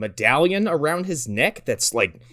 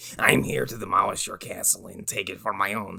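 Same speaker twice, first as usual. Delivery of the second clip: very low-pitched, rough, rasping voice; 9 semitones lower, 6 dB quieter than usual. Joking about a demolition-hungry movie character: Christopher Lambert impression. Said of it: "Lambert comes out every time".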